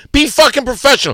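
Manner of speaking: loud, furious shout.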